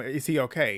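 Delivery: ordinary delivery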